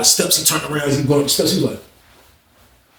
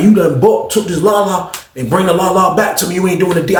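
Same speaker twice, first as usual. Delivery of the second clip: ordinary delivery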